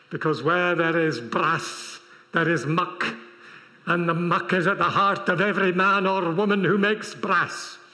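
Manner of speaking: Scottish accent throughout the line. Speaker mid-talk slipping into a scottish accent. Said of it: "That was my Scottish accent".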